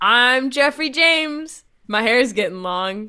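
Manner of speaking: ribbing, teasing, poking-fun caricature voice. Doing a teasing bit about another speaker: mocking impression of Jeff. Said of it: "here's me as Jeff".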